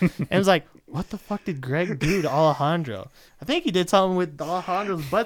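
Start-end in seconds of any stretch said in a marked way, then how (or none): none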